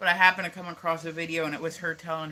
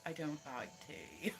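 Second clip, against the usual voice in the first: put-on very quiet, hushed, proper British accent; 6 semitones higher than usual. Speaker quoting a British woman they know, imitating a proper British accent. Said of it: "She sounds like a proper Brit".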